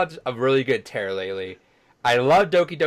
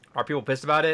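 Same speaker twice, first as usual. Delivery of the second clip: ordinary delivery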